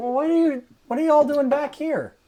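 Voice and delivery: high, loud country farmer voice.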